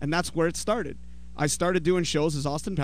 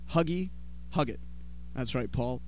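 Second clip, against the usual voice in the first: ordinary talk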